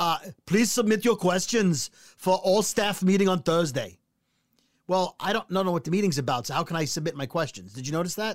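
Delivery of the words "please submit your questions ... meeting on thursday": put-on Austrian accent. Reading the big boss's email aloud in an Arnold Schwarzenegger accent. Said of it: "so it had an accent".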